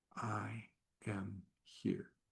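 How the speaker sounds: hushed, very quiet whispered words. Guiding listeners through an exercise, the speaker models the first step, whispering.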